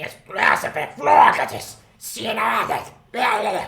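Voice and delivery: little, high, raspy goblin creature voice. Voicing a goblin who speaks to the third goblin: goblin voice. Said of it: "And he goes".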